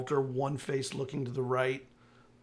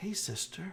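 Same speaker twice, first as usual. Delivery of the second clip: soft little whisper, higher and quieter; 5 semitones higher, 7 dB quieter than usual. Voicing an unseen creature speaking to a player: little whispery voice. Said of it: "hear that little whispery sound".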